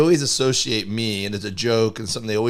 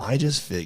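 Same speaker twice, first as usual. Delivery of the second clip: whispering, higher and quieter; 3 semitones higher, 4 dB quieter than usual. Explaining a plan to another speaker, whispering. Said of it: "Why are you whispering?".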